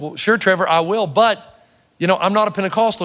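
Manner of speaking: plain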